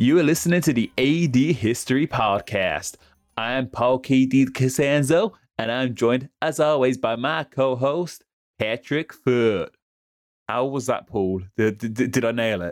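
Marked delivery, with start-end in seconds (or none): 0.0-9.7 bad, awful, fake put-on American accent. Opening the podcast, a host reads the introduction in an awful American accent. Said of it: "That's just an awful American accent".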